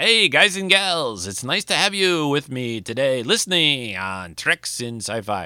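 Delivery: put-on old-time 1950s radio announcer voice. Signing off a podcast, in a 1950s announcer voice. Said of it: "I'm a 1950s announcer".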